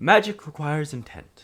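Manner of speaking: put-on female character voice. Voicing the other of two characters in the story, in a female voice. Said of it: "speaks in a uh, in a female voice".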